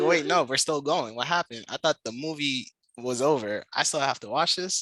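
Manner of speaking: normal talking voice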